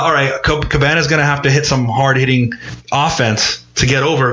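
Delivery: normal talking voice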